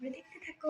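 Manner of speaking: speaking very softly.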